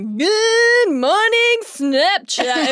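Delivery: very high, shrill, obnoxious voice, drawn-out "good". Retelling the husband's morning Snapchat greeting, imitating Matt's obnoxious voice. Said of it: "in like the most obnoxious voice you've ever heard".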